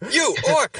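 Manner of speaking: mock very high knight voice, shouting. Imagining a knight in combat calling out an orc: imitating a knight shouting. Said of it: "some knight just being like".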